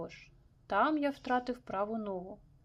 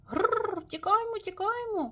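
crying out, exclaimed, much higher pitch; 11 semitones higher, 4 dB louder than usual. Narrator reads Monsieur Moody's cry as he rises into the sky: exclaimed. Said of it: "вигукнув місьє Муді".

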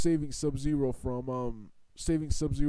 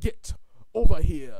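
put-on awkward, rushed voice, louder; 3 semitones higher, 6 dB louder than usual. Retelling a cartoon fight scene, imitating Scorpion's awkward rushed line. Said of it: "It sounded so awkward and rushed and forced".

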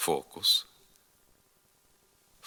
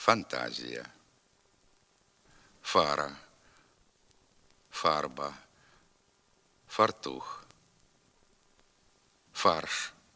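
slow, spaced words with long pauses between. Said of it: "Тепер повторюйте за мною".

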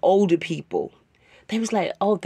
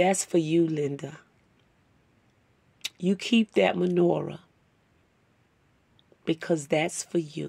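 tearing up, choked up, lower pitch; 2 semitones lower, 6 dB quieter than usual. Speaker repeating what a woman told her, tearing up. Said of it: "I'm tearing up a little bit".

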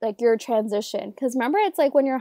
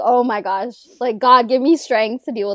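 put-on exasperation, louder; 5 dB louder than usual. Recounting a favorite part of a story, acting out his reply, mock-exasperated. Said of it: "he was just exasperated".

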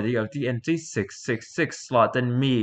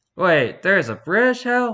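put-on American accent, pitched up; 7 semitones higher, 4 dB louder than usual. Reading a scene aloud, the speaker voices a man in an American accent. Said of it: "I'm still giving him the American accent".

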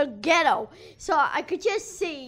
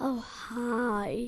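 creepy put-on character voice, quieter; 4 semitones lower, 6 dB quieter than usual. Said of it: "it's the creepiest thing ever".

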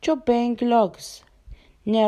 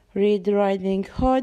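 ordinary delivery

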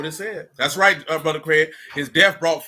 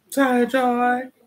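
mock young woman's voice; 8 semitones higher than usual.

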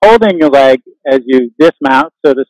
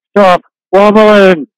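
mock speech through gritted teeth, higher pitch; 4 semitones higher than usual. Yoga teacher retelling what a class member said to her, through gritted teeth. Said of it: "said through her gritted teeth".

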